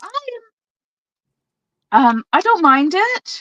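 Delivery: very high, unsure, hesitant and halting. Answering another speaker's question about a product: hesitant. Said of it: "hesitation in my voice".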